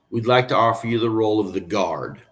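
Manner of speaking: ordinary delivery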